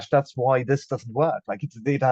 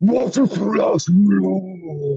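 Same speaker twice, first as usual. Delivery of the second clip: put-on creature voice, higher and louder; 8 semitones higher, 6 dB louder than usual. Offering to show a trained girl voice as a joke: Jabba the Hutt voice. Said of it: "that was Jabba the Hutt".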